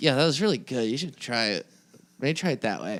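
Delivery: tired, worn-out nerdy voice. Speaker shows how they sound when tired and concentrating hard: imitating a tired nerd's voice. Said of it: "what I equate to like a nerd's voice".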